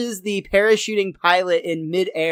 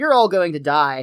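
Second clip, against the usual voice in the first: ordinary delivery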